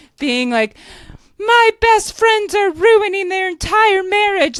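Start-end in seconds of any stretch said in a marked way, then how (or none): 1.4-4.6 high, loud, weepy sobbing through the words. Retelling a dinner scene where a couple breaks up: imitating Lindsay sobbing. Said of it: "Lindsay's sitting here fucking sobbing".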